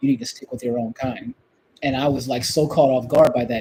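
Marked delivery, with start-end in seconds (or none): 0.0-1.3 half-whisper pitched very high. Retelling what a man half-whispered as the speaker was about to leave, in a half-whisper. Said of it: "he whispers to me".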